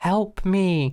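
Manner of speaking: fake weird creepy whisper. Retelling a scene where the Rose whispers into the doctor's ear: imitating the Rose's creepy whisper. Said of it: "in a kind of weird and creepy way".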